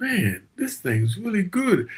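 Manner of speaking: high-pitched, slow, amazed musing tone.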